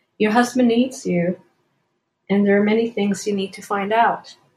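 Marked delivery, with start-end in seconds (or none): none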